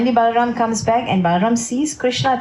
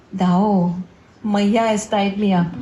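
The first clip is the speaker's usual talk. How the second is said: meek, gentle, mild delivery; 3 semitones lower than usual. Retelling a story, voicing Krishna answering Balaram: Krishna speaking very softly. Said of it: "Krishna says very softly".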